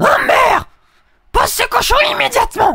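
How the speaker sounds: very high, loud cartoon mom voice. Speaker shows the audience what Marge Simpson really sounds like: Marge Simpson voice. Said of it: "ça c'est plutôt Marge Simpson".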